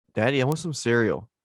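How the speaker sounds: put-on little kid voice. Imitating a child waking a parent early for cereal. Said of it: "Amaz's gonna be slapping my face like".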